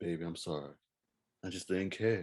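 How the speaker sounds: the smoothest possible, easy delivery. Imitating a founding member's famous line: imitating a smooth voice. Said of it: "he made it sound so smooth".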